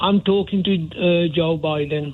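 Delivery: ordinary delivery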